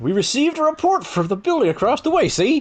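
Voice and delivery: high, cartoon-like voice. Playing a character in a group roleplay scene, in a Goofy voice. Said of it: "I was trying to go for Goofy".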